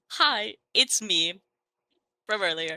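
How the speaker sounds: hesitant, hesitating delivery in character. Voicing a character who taps someone on the shoulder: hesitant in character. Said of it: "visibly hesitate and then just".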